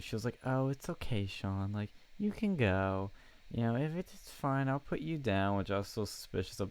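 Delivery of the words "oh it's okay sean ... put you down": mock condescending, dismissive, brushing-off tone. Retelling how a woman told the speaker he could leave, in a mock-condescending tone. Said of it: "such a condescending tone".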